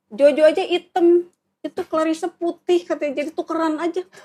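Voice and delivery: high, loud mock yell.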